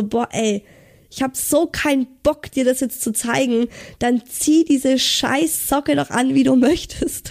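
put-on grumpy, can't-be-bothered, irritated snapping. Speaker retelling what he snapped at the speaker, retelling an annoyed snap. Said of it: "hat er mich so angezickt".

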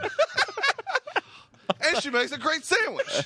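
high, excited yelling. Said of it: "Stop yelling at me".

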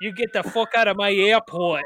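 put-on thick Chicago accent, laid on heavily. Describing the Die Hard airport cop, Dennis Franz Chicago accent. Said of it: "thick ass Chicago accent".

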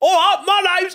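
put-on very high Cockney East London accent. Retelling being asked for dialogue, the speaker walks back in with an EastEnder accent. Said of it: "give us a dialogue in your EastEnder accent".

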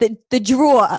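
heavy New York accent, thick drawl on drawer. Asked about an american word, the speaker says it in a heavy new york accent. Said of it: "I can't say it without a heavy accent".

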